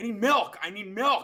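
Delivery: play-acted very high, frantic, panicked pleading tone. Retelling acting out burning from a hot pepper backstage: imitating own past panic. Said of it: "really committing to the bit".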